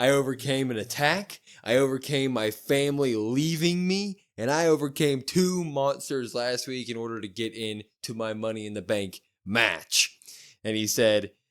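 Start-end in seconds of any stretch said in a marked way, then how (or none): none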